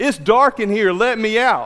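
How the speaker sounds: loud calling yell. Retelling how someone under the funeral home floor yelled during a viewing, retelling a yell. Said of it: "Jeff yelled".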